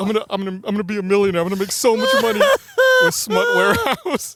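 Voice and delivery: loud, swooping, cocky, self-satisfied boasting. Retelling how John described his website plan: imitating John boasting proudly. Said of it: "He was so proud".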